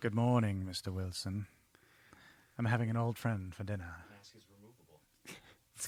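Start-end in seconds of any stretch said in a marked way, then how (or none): 0.0-3.9 put-on creepy killer voice, lower and quieter. Doing a bit as Hannibal Lecter for the group: Hannibal Lecter voice. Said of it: "he did say Hannibal".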